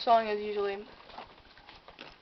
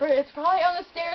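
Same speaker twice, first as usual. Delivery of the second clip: normal talking voice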